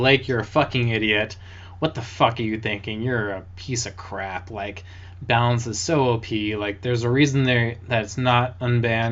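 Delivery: ordinary delivery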